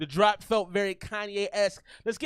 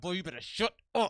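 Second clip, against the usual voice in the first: hushed, squeezed through clenched teeth; 3 semitones lower, 5 dB quieter than usual. Speaker imitating his mom talking to him, talking through her teeth. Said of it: "when she was talking through her teeth".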